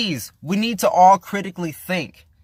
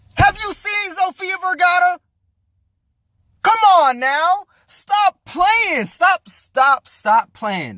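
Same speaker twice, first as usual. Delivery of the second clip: very high, all-out shouting; 12 semitones higher than usual. Ranting to the listener about an interview with sofia vergara, yelling. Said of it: "I'm sorry to yell".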